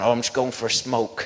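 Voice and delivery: put-on Norfolk English accent. Climbing out a window, speaker answers a man who woke up; put-on Norfolk accent. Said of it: "I put on my best Norfolk accent".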